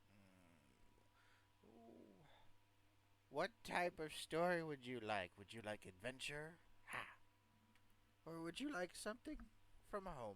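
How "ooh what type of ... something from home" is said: put-on elderly man voice, high and swooping. Voicing an old man offering the players a story: old man voice. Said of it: "my old man voice".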